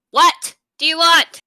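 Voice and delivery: loud, drawn-out yell. Answering a father calling from another room in a game: yelling. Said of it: "so I'm just gonna yell".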